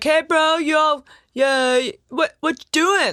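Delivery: loose, drawn-out, high-pitched hollered yell. Retelling how he yelled out in the forest: imitating someone yelling. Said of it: "yelled out to it and was just like".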